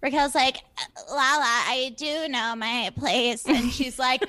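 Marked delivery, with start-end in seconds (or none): 1.1-3.4 slow, shaky, wobbling voice. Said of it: "Raquel, why is her voice so shaky?".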